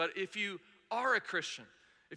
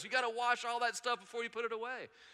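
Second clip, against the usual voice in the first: mock called-out yell, held back; 3 semitones higher than usual. Telling how a guy across the parking lot yelled at them, retelling a stranger's yell. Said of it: "he's just yelling at us".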